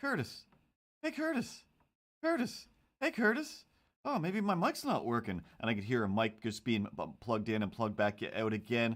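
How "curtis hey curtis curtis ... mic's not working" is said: put-on very high small child's voice, sing-song, called out. Retelling a game round where a voice called out: imitating a small child's voice. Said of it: "this small child's voice".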